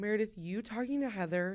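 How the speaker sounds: put-on patronizing, condescending, talking-down voice. Speaker retells a woman scolding someone at dinner; mock-condescending tone. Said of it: "she said it in such a condescending way".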